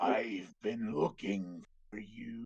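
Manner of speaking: deep voice of a huge dragon. Retelling a game moment to the group, the dragon's voice. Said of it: "you hear the voice of the dragon like".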